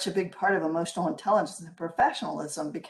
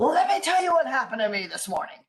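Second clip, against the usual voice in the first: put-on top-of-the-voice furious yell, high and swooping; 7 semitones higher, 4 dB louder than usual. Retelling a disruptive man's outburst, imitating him screaming at the top of his voice. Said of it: "he's like at the top of his voice saying".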